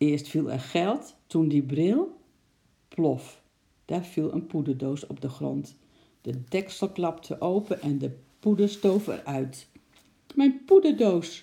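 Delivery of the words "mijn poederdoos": very loud, very high-pitched cry. A lady sees her powder box fall to the ground: cried out. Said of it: "riep de mevrouw".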